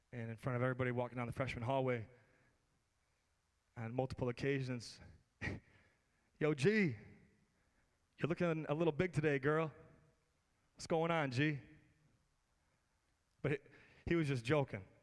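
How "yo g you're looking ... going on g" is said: big, booming jock voice projecting loudly. Retelling a football-playing friend teasing a girl in the freshman hallway, big voice. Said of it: "had a big voice".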